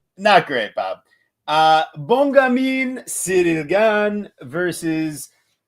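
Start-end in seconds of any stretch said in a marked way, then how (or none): 1.5-5.3 slow, put-on French accent. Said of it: "you did your best French accent".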